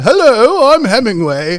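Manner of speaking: acted upper-class British accent. Retelling how a man introduced himself, in a posh British accent. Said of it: "talking in like a like a posh British accent".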